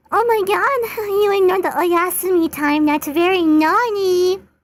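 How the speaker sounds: very high, very loud, shrill, cutesy uwu voice. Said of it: "I should read this in the Uwu voice".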